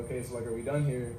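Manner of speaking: plain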